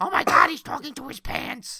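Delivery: very high-pitched woman's voice. Acting out a nosy neighbor in an imagined scene: Marge mixed with Edith Bunker voice. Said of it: "That sounded like Marge mixed with Edith Bunker".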